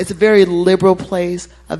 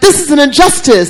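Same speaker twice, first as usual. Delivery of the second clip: imitated woman yelling, higher and louder; 8 semitones higher, 6 dB louder than usual. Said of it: "she's yelling".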